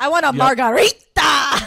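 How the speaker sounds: very slow, loud, over-careful delivery. Comparing a sound to people ordering: imitating someone ordering in Spanish. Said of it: "when someone tries to order in Spanish".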